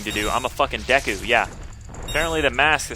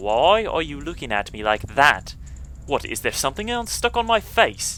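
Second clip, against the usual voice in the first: put-on English accent; 2 semitones higher than usual. Playing a little girl who wants a door opened for her: English accent. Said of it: "and [name]'s going to be the one with the English accent. / a helpless little girl is asking you, / I want to do the English accent".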